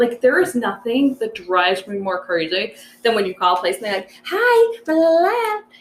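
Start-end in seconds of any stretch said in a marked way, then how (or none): 4.3-5.6 drawn-out, very high, screechy voice. Imitating someone answering a business phone: imitating a screechy phone voice. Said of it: "have this screechy voice, like the phone voice".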